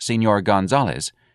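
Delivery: plain reading voice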